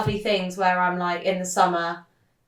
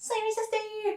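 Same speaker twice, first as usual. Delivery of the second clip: put-on Bristolian English accent; 7 dB quieter than usual. Naming the town where they live, imitating Holly's Bristolian accent. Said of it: "That was a good Bristolian accent".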